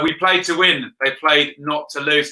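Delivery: ordinary delivery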